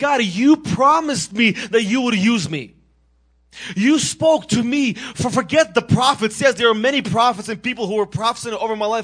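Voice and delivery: loud yelling voice. Speaker retelling how they cried out to God, retelling yelling up to God. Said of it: "And I'm yelling up to God".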